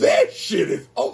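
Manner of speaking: voice cracking. Reacting to an album with excitement, voice cracking. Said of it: "my voice cracked".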